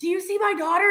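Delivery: high-pitched, screaming call-out. Retelling a Comic Con story about a girl's dad: imitating a dad screaming. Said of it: "And he's screaming".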